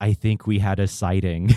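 put-on spoken with a Middle Eastern accent. Retelling what one of John's tour goers said, in a thick Middle Eastern accent. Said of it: "in a thick Middle Eastern accent".

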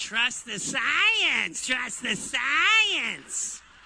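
low cockatoo voice, last word drawn out. Speaker calls the listener a cockatoo and mimics it: cockatoo impression. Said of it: "the cockatoo impression".

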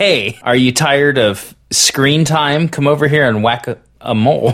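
ordinary talk

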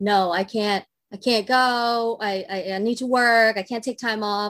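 mock insistent, unbudging, slow tone. Telling how mom refused to take time off for a vacation: imitating insistent refusal. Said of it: "my mom was like insistent".

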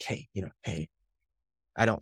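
hushed, very quiet voice.

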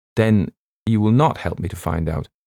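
ordinary delivery

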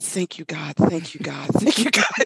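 put-on relieved tone. Retelling a story, speaker quotes a widow praying in the chapel, mock-relieved thanks. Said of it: "she goes to the chapel and she's like".

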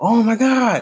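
thrilled, high energy.

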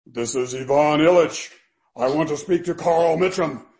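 big, loud, booming voice. Retelling a surprise phone call from Ivan Illich: Ivan Illich booming voice. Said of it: "a booming voice out of, uh, the heavens".

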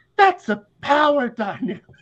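ridiculous, very high-pitched, slow squeaky voice. Retelling what he says in the clip: imitating a very high-pitched voice. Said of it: "with the highest pitch voice".

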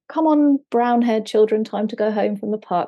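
plain

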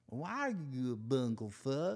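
slight simple-minded character voice. Repeating his own earlier question with a hint of Forrest Gump voice. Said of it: "I think I just added a little bit of Forrest Gump with it".

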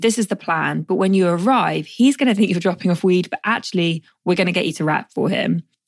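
usual speaking voice

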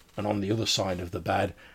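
plain reading voice

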